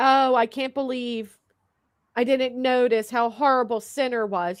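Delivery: phony, put-on remorseful lament. Mocking a person's claim of regret: mocking fake remorse. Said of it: "Brittany's fake ass shit like".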